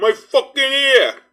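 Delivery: put-on Upper Midwest accent. Mimicking an American man's angry phrase: half Chicago, half Milwaukee accent. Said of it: "half Chicago, half Milwaukee".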